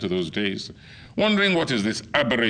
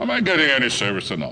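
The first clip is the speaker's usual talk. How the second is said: put-on British accent with a swooping tune; 2 semitones higher than usual. Retelling stopping the man serving others to ask for service, in a put-on British accent. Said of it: "putting on my best British accent".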